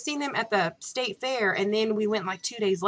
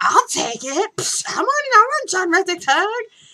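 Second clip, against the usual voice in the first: loud outburst, much higher; 10 semitones higher, 8 dB louder than usual. Retelling how the speaker spoke up after a guy refused a hug, retelling a loud outburst. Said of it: "It was loud".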